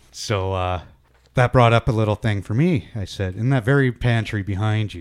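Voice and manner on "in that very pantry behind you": ordinary talk, nothing marked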